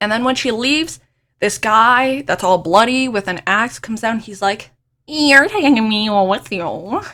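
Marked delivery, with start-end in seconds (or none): 5.1-7.0 put-on nasal cartoon voice. Retelling a book scene where an axe-wielding man speaks: knockoff Squidward impression. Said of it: "a knockoff Squidward impression for him".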